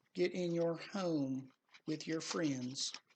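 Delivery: southern American accent slipping out. Showing viewers his two decks, slipping into a southern accent. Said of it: "That's my southern accent".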